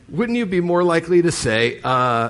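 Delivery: ordinary talk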